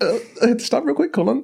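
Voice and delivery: put-on choked-up voice. Acting out the other speaker stopping mid-story, imitating choked-up voice. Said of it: "I'm getting choked up".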